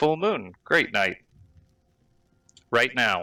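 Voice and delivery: clockwork-like ticking voice from the throat. Voicing a character as he answers the party: ticking clock voice. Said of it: "He waves his hand and points up above him, and you hear again the clock sound coming from his vocal cords. / He points over towards Raylan and he says, / He wants us to leave with [name] to [name]'s n".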